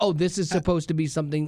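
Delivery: normal talking voice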